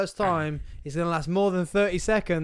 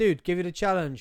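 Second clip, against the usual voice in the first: usual speaking voice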